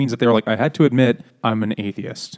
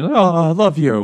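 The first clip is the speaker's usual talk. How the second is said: play-acted tearful, high, very slow, drawn out, affectionate; 7 semitones higher, 4 dB louder than usual. Retelling the Deltas weepingly hugging after gassing: mock weepy affection. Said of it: "weepingly hugging each other".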